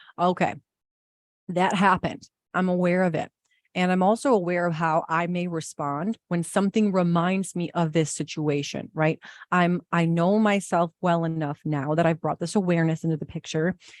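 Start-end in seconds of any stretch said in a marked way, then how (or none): none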